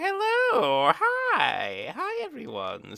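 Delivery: very high, slow sing-song with "hi" stretched. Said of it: "a nice [name] voice we haven't heard before".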